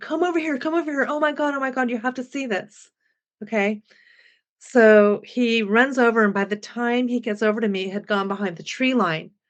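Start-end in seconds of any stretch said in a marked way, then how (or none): 0.0-2.9 mock, high-pitched, urgent screaming. Retelling screaming to Jack to come see something: retelling a scream. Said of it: "I started screaming at Jack".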